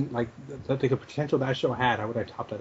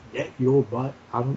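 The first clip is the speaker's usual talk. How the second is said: ordinary delivery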